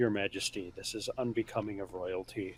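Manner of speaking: hushed, very soft, deep rumbling voice. Describing placing a paw on the king's chest: deep rumbly voice. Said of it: "in my deep rumbly voice".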